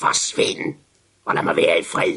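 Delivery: low, rusty, rasping voice. Narrator reading a story, a voice answering from inside a coffin, rusty voice. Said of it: "lød en rusten stemme ned fra kisten".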